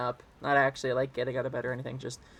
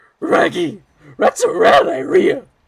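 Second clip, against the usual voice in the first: put-on cartoon dog voice, much higher, louder; 11 semitones higher, 12 dB louder than usual. Improvising a cartoon bit, replying as the dog, on-the-spot Scooby-Doo voice. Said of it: "an on the spot Shaggy".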